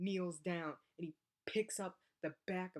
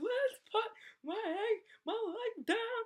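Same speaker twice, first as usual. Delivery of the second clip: put-on very high, loud, weeping, sobbing cry; 6 dB louder than usual. Speaker retelling being hurt while someone held their leg up, retelling crying and screaming. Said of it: "I'm like crying and weeping and screaming".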